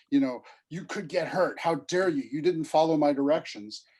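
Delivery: mock angry screaming, acted-out loud yell. Describing a father who grabs his child from the street, retelling a father's angry scream. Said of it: "starts screaming at him".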